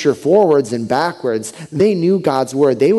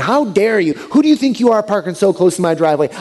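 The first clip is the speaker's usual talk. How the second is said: mock screaming, much higher pitch, like a chewing-out; 5 semitones higher than usual. Retelling a woman chewing him out in front of his fourth-grade friend, retelling her screaming. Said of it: "She's chewing me out in front of my fourth grade friend".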